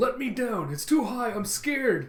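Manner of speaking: put-on high, loud, frightened cry in a child's voice.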